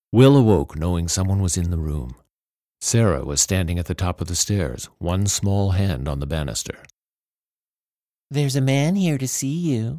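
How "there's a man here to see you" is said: high, sugary, cloying, sickly sweet little voice. Narrator reads Sarah's line to her stepbrother Will, sickly sweet little voice. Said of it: "she said in her sickly, sweet little voice".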